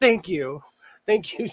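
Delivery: put-on near-tearful voice. Retelling thanking a vendor for a compliment, acting out near-tearful thanks. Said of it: "I almost cried in her face".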